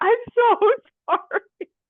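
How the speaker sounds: high, slow, mock sobbing, apologetic tone.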